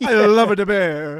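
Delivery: put-on Italian accent. Chatting about a TV show, slipping into an Italian accent. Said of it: "I don't know why I did an Italian accent".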